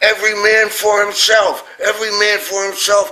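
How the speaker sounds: piercing, very high, shrill scream. Retelling a sergeant running up and down the beach: imitating someone screaming. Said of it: "and he's screaming".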